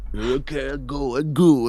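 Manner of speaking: quiet grumbling, muttered under breath. Voicing a cook who goes out to check a noise: muttering. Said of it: "He mutters out".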